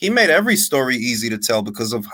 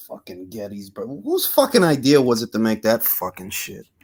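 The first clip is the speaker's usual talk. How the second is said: sour, bitter, begrudging, resentful voice. Complaining about a very long movie to friends: bitter. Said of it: "you sound so bitter over that".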